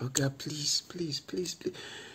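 put-on barely audible, very quiet hushed pleading. Retelling a woman seen begging around 4:30: imitating her begging. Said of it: "She was just there begging".

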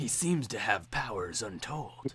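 gruff, tough-guy badass hero narration. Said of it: "I sound like a gruff badass".

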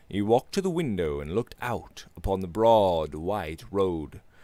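ordinary delivery, nothing marked

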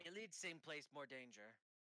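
put-on chief voice speaking in broken English. Voicing the kobold chieftain announcing a plan: kobold chieftain voice. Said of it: "hey, Mister Chieftain".

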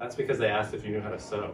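plain

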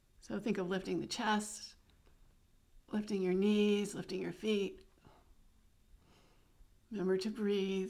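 slightly strained voice, tight with effort. Instructor guiding listeners through a pose while doing it, slightly strained voice. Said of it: "You can hear the little strain in my voice".

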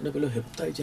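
ordinary talk, nothing marked

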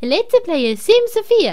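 Japanese accent, L and R swallowed. Showing what a Japanese accent sounds like in English: imitated Japanese accent. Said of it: "Das ist japanischer Akzent".

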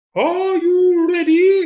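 very high, very loud owl hoot. Owl starting the race between Hare and Tortoise, hooting. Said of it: "Hooted Owl".

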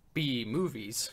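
mock air-quote stress, pause before 'B movies'. Teasing another speaker about his delivery, imitating air-quoted 'B movies'. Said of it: "you're speaking smoothly and then you go".

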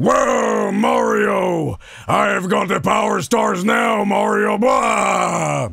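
video game villain voice, final blah stretched out. Arguing over who sounds like Eggman, the speaker shows how Bowser sounds, Bowser voice. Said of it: "Bowser sounds like this".

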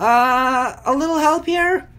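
tiny, small voice. Narrator reading a Smurfs story, a voice calls out during the beach search: small voice. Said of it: "A small voice called out".

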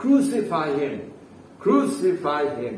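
ordinary talk

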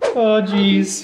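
very high, nervous cartoon voice, pitch pushed up. After announcing they'll talk like Morty from Rick and Morty, doing a Morty voice. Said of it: "I'm just going to talk like Morty".

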